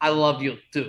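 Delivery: put-on loud, very thick Russian accent. Retelling Gino answering his buddy from his car, in a super thick Russian accent. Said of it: "super thick Russian accent".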